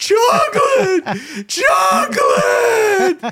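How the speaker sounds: very high, frantic, emotional yell. Retelling a woman running around the neighborhood for her missing dog, imitating an emotional yell. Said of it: "She's got this emotional voice and she's running around the neighborhood yelling".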